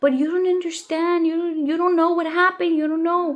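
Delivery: high, distressed, insistent, upset outburst. Retelling the son's upset protest about what happened: imitating son yelling. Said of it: "my son comes crying, or not crying, yelling".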